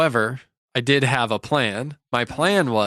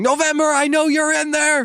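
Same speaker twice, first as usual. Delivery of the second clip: put-on, enraged, very high-pitched shriek; 4 dB louder than usual. Retelling how someone pounded on the door at two in the morning: imitating someone screaming.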